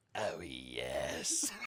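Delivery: very low, deep, drawn-out, different doll voice. Acting out the doll answering the child: imitating a doll's deeper voice. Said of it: "the doll would respond in a different, deeper voice".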